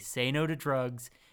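ordinary talk, nothing marked

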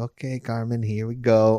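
normal talking voice

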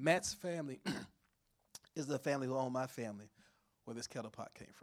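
choked-up voice catching with emotion. Revealing the findings of years of family research, choked up. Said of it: "I'm choked up here talking about this".

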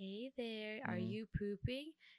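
soft, creepiest put-on voice. Describing a bathroom prank, imitating the sound played to a stall, creepy voice. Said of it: "it's like the creepiest like voice".

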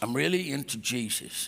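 best-attempt put-on Oklahoma accent. Speaker says a common phrase as if from Oklahoma: put-on Oklahoma accent. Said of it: "I'm going to say it like I am from Oklahoma".

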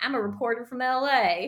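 put-on Southern drawl. Mimicking a Canadian actress playing an LA reporter: mock deep-South accent. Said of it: "she sounded like she was from the deep south".

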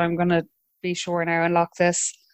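usual speaking voice

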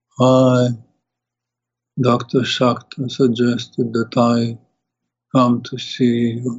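slow, indistinct mumble, words barely articulated. Recounting how a man walked in and introduced himself, mumbling. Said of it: "he walked in like this and was like mumbling".

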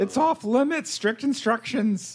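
very high, swooping, sing-song female bugbear voice. Voicing the character Duggar for the others, in Duggar's lady bugbear voice. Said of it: "that's not bad".

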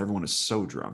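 plain

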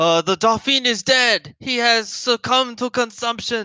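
screamed announcer-style delivery. In the game, a crier from inside the palace screams out the news. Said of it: "a crier from inside the palace screams out".

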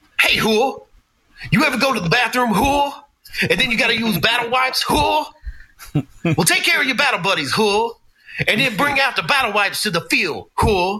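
lecturing tone, pitched way up. Recalling your basic training at Fort Knox, act out how he taught, imitating Drill Sergeant Walker. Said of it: "And he taught like this".

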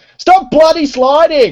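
shrill, very high, loud Australian shout. Explaining where the Aussie accent came from, imitating Jared's Aussie shout. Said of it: "hearing Jared shout the word".

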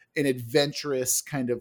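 plain

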